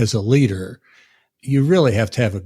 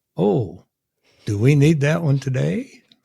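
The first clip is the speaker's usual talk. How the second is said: words breaking into laughter, pitched up; 5 semitones higher than usual. After reading out the next item, the speaker asks the group, laughing while speaking. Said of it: "Sorry, I'm laughing".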